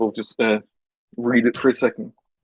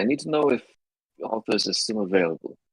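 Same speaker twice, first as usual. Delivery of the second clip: hushed voice, quieter; 4 dB quieter than usual. Voicing a character who asks before another leaves: quieter voice. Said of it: "ask in a quieter voice".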